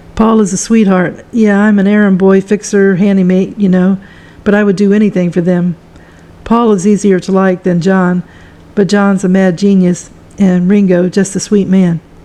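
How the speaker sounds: ordinary talk, nothing marked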